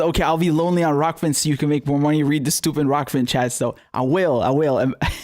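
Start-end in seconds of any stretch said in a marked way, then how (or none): none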